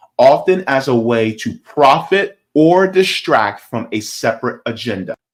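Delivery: unhurried, slow, very distinct, carefully clear reading aloud. Reading a definition aloud, slow but very distinct. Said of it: "I'm going to read kind of slow, but very distinctly".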